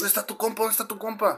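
high, insistent, repeated demanding tone. Retelling how an officer pointing a gun demanded: imitating an armed officer demanding. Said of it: "me estaba apuntando con la pistola".

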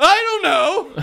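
very high, very loud, super intense full-on delivery. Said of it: "He's just super intense".

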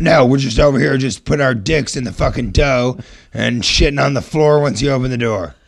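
loud, surly, rude voice. Asked to impersonate the guy who answered the phone, rude phone guy impression. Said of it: "can you do an impression of the guy that answered the phone".

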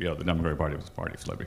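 very quiet, rushed, indistinct mumble. Imitating how an admission is usually said, quiet indistinct mumble. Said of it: "This is usually said sort of in a mumble".

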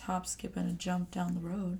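sultry low voice. Reading out a short clip before a podcast begins, sultry low voice. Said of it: "Why is your voice so sultry right now?".

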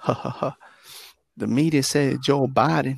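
put-on eerie, creepy ha-ha-ha laugh. Retelling what the creepy laughing preacher said: imitating the preacher's creepy laugh. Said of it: "he does that laugh".

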